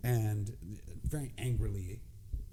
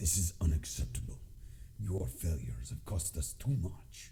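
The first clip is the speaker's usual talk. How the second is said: low, gruff infernal demon voice; 4 semitones lower than usual. Game master voicing a demon heard through a door, gruff demon voice. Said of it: "you hear a gruff voice".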